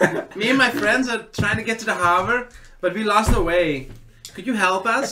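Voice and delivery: put-on sudden German accent, very high pitched. In a role-play game, a player's character addresses two guards in a German accent. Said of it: "is he German all of a sudden?".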